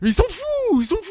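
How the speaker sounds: very high, swooping, exasperated and angry rant. Complaining that seaweed was listed before galettes and strawberries: angry ranting. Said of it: "ça m'énerve".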